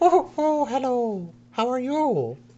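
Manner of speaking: tiny gnome voice, very high pitch, slow. Voicing a little gnome who hops up to greet a customer: gnome shopkeeper voice. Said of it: "little gnome. And he just kinda, like, hops up and goes".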